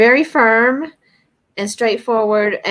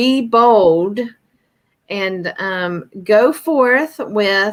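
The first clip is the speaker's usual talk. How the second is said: very stern, slow delivery. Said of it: "he's being very stern".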